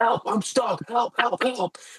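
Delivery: screamed cries, very high and shrill. Retelling a lady stuck in a bathroom: imitating someone screaming for help. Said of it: "like, screaming".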